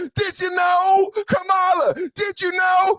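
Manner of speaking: very high shouting, deliberately slow and drawn out. Showing what will be yelled at the candidate every day: yelling. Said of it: "I'm gonna yell".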